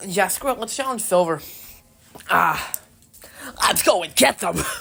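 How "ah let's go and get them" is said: rough, creaky, raspy monster voice. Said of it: "decent enough impression".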